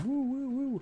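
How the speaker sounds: very high wailing police siren imitation. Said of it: "that's my cop impression".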